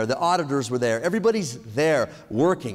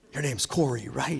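put-on whisper, quieter; 2 semitones lower, 6 dB quieter than usual. Retelling how a guy whispered in a bathroom during an interview: imitating someone whispering. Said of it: "he starts to whisper".

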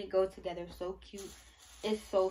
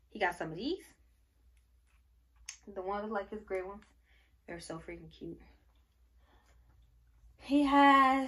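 winded, breathless speech; 5 dB louder than usual. Showing off baby clothes in a video, out of breath. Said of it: "I'm out of breath".

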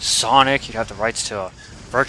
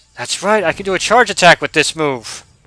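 full-on, loud, high-pitched yelling; 7 semitones higher, 5 dB louder than usual. Streamer playing a game, explaining a charge attack move, yelling. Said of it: "Sorry for yelling".

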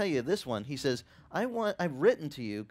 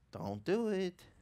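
soft, gentle little inner voice; 3 semitones higher, 4 dB quieter than usual. Describing the little voice inside one's head, quoting it as a gentle inner voice. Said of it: "The little voice that goes gently".

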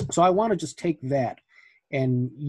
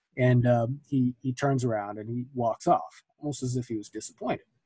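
plain

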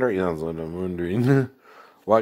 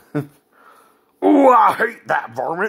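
high, loud, squealing cartoon cowboy voice; 11 semitones higher, 6 dB louder than usual. Going through cartoon characters you imitated as a kid, do a Yosemite Sam voice. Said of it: "rascally like Yosemite Sam".

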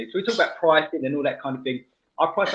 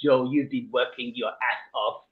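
put-on French man's accent. Retelling what a french fella said as the job wrapped up, in his french accent. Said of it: "if I do his accent".

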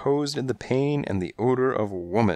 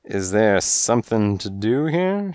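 long, slow, lazy drawn-out drawl; 4 dB louder than usual. A woman with hours to kill asks around noon: drawling. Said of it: "she drawled".

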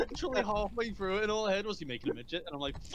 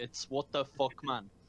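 mock-angry voice, much lower; 7 semitones lower than usual. Talking with friends about Jamie, imitating Jamie's angry voice. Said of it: "Jamie's angry voice is like he's literally angry".

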